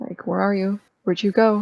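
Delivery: hushed whisper. Covering his ears, acting out whispering to himself: quiet whisper. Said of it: "quietly whispering an infernal to myself".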